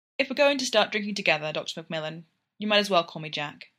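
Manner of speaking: ordinary delivery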